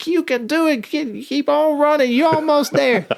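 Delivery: very high-pitched, acted-out cheering yell. Retelling a commander yelling encouragement from across the field: imitating someone yelling encouragement. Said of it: "she's yelling at me".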